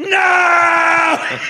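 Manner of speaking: very high, drawn-out, top-of-the-lungs shriek. Telling a story about a flight, the speaker acts out a man's reaction: acting out a lung-top scream. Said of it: "He's screaming at the top of his lungs".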